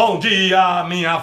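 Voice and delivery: big, booming, thundering radio announcer voice. Promoting waking up with a radio announcer, the speaker demonstrates his greeting in booming radio announcer voice. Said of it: "aquela voz de trovão pela manhã, dando um bom dia a você assim".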